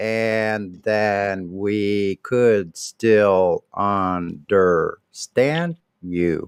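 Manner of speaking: speaking really slowly. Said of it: "Talk really slow like this".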